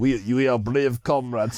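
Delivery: very slow, drawn-out, exaggerated Russian accent. Speaker acts out the russian side in a comparison of nationalities, imitating a russian accent. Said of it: "It's like".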